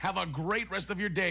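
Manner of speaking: plain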